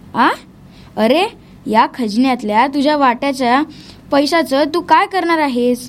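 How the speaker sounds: ordinary delivery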